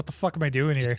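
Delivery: put-on bored cop voice. Voicing a cop in a teaser who looks bored: imitating a bored cop. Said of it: "even the cop there looks bored. He's like".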